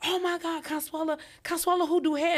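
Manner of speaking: put-on starstruck excitement. Retelling how a stranger greeted her: imitating an excited fan. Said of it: "And she all excited".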